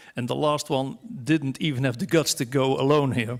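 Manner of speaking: normal talking voice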